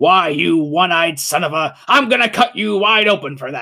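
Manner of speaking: broad, cartoon-like superhero voice. Showing the voice imagined for a character while reading, cartoonish Wolverine voice. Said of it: "I had this very specific voice for Wolverine in my head".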